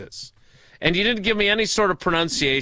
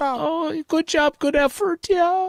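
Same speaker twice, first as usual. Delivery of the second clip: high, babyish put-on baby-talk voice; 10 semitones higher than usual. After another speaker praises his new voice, he answers in a baby voice. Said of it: "baby voice [name]".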